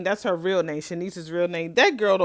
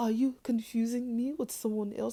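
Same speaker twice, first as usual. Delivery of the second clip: mock French accent, higher and quieter; 4 semitones higher, 9 dB quieter than usual. Retelling a soap scene, imitating a character faking a french accent. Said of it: "Trying to talk like she French".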